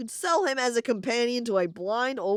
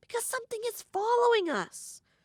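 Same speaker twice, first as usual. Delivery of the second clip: tiny creature voice, much higher pitch; 11 semitones higher than usual. Narrator voices the creature Jan warning the listener; tiny Jan creature voice. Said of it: "insists the creature in a tiny voice".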